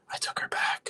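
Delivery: eerie, hushed, soft and breathy creepy whisper. Retelling how a man admitted things in an interview, imitating a creepy whisper. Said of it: "he's like whispering like this".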